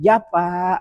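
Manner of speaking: gentle polite tone. The speaker demonstrates how to answer a parent who calls: soft, gentle reply. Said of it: "suara itu bisa menyenangkan orang yang memanggil".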